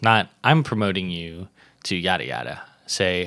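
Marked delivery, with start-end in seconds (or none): none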